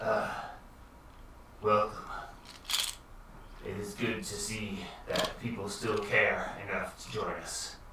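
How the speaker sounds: breathy, exhausted, worn-out whisper. Voicing a character in a chair greeting arrivals: voice of a character who hasn't slept in years. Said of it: "sounds like he hasn't slept in years".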